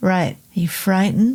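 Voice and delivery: ordinary talk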